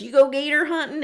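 put-on sudden country accent. Retelling the dad's question, imitating the dad's sudden country accent. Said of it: "he got real country all of a sudden".

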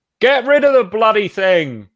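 shrill, very high, loud shout like from the stands. Describing a shout often heard at Portman Road, imitating a fan's shout. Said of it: "It's the shout of".

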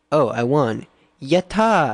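loud, drawn-out, showing-off wannabe cheer. Doing an impression of a guy from Phi winning at ping pong: Japanese-word-dropping guy. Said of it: "my best guy in Phi who just learned three Japanese words impression".

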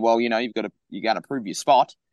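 put-on Australian accent. Retelling phoning Ryan Campbell about rejoining the Dutch, Ryan Campbell's Australian accent. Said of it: "in his classic Australian accent".

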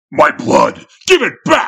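very high, shrill snarling voice. The figure answers Jason's question, snarled. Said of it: "Snarled the figure".

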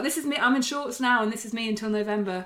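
ordinary delivery

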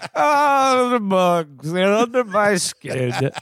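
slow, high-pitched voice, words dragged out slowly. Doing a joke impression, Orson Welles impression as addict. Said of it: "That's my impression of Orson Welles as a crystal meth addict".

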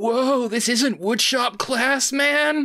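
very high, slow, dragged-out dopey stoner drawl. Retelling Matthew Lillard's reply when the teacher says he's not on the list: stoner voice. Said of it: "in the most stoner voice says".

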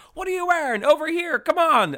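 shrill, very loud, very high calling out. Describing a premiere, the speaker acts out the shouting that was missing, imitating someone shouting. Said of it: "the like shouting like".

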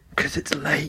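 acted whispering. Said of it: "Why are you whispering?".

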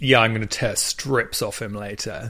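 imitated loud, arrogant man's voice. Retelling what a man on a train said on his phone: imitating an arrogant loud caller. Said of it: "he literally said the sentence".

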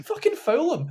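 mock screaming. Retelling shouting at the telly as a player runs past: imitating screaming at the telly. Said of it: "I'm screaming at the telly".

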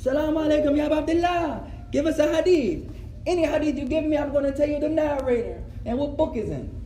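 put-on tiny, very high, cute little boy voice. Speaker retells a small boy in the market asking for a hadith, in a cute little boy voice. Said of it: "he had a little cute little voice".

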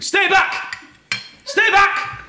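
mock very high, drawn-out yelled shout. Retelling a friend shouting from the woods: imitating someone shouting. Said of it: "he just kept shouting".

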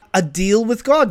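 ordinary delivery

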